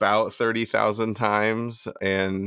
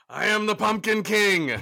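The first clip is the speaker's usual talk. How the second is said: loud, very high, belted-out voice; 12 semitones higher than usual. Introducing oneself after the host's welcome: loud Pumpkin King voice. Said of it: "it's so loud".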